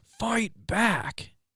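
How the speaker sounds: put-on sudden shriek, very high-pitched. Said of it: "I just screamed at my truck".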